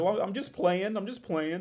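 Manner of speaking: wobbly, quavering voice, pitched very high. Retelling a man's reply after a face-to-face standoff: imitating someone getting shaky. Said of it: "starts getting all shaky and says".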